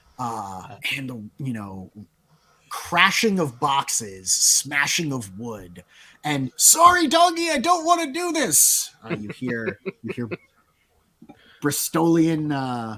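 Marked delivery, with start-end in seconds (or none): 6.6-8.9 very high-pitched, sorry-sounding, apologetic call. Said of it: "Davidos of the Bristol Wilds calling out".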